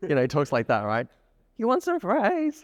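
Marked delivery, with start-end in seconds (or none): 1.6-2.6 very high, every phrase lifting upward. Imitating a man whose name you don't know: high-pitched upward inflection. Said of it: "talks upwards in a hey, high pitched voice".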